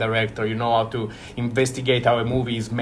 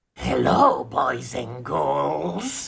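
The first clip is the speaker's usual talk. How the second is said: bad creaky ghoulish horror-host voice, raspy, "girls" drawn out; 3 semitones higher than usual. Accepting an award, the winner greets everyone with a bad Crypt Keeper imitation. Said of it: "I apologize for my terrible imitation".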